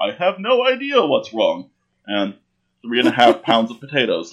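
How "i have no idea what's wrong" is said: mock-deadpan, flat put-on delivery. Describing patients who aren't upfront, imitating a deadpan patient. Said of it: "It's the people who just deadpan".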